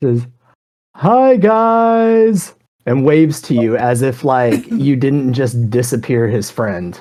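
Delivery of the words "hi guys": put-on big goofy friendly giant voice. Voicing a Goliath who greets the party after a fight: big goofy friendly voice. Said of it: "in a big, goofy, kind of friendly voice".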